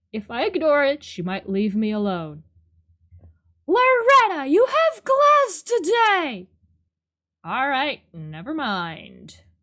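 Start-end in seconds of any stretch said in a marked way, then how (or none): 3.7-6.5 stern, very high-pitched calling voice. Voicing the mom character calling to Loretta, in a mom voice. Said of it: "mom voice".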